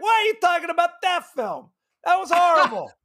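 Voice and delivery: very high-pitched, thoroughly upset outburst. Retelling an actor's reply to a fan, James Caan impression. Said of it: "love your James Caan, uh, impression there".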